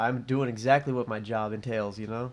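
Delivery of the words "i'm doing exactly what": usual speaking voice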